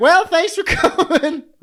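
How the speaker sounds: very high voice. Podcast host imagining the others wrapping up the show, impression of the co-hosts. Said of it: "That was my impression of you guys".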